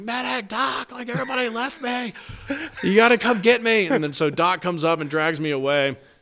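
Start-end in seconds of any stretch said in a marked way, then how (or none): 0.0-3.9 put-on very high-pitched screaming. Recalling landing on the ground and calling for the medic: retelling screaming for a medic. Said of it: "I start screaming like".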